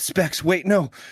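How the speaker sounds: panicked, shrieking, high voice. Voicing a character who jolts awake from rest: shrieking in panic.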